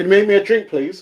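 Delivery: very loud, very high shout. Calling to another person in the house for a drink: shouting. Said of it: "Are you shouting out on your live?".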